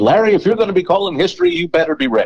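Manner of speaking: very high, swooping delivery. Retelling advice he was given about calling history: Tom Hammond voice. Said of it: "in the voice of Tom Hammond".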